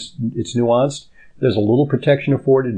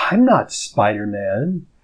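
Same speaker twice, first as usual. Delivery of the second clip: play-acted offended, huffy, indignant tone, swooping pitch; 4 semitones lower than usual. Retelling a six-year-old's reply to a museum guard: imitating an indignant protest. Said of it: "he became indignant, and he said".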